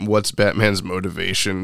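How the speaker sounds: ordinary delivery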